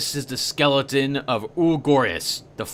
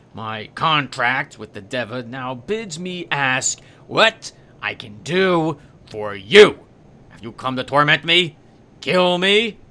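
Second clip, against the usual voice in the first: slow, words forced through gritted teeth. A narrator reads a character turning back to you after ranting, through gritted teeth. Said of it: "speaks through gritted teeth".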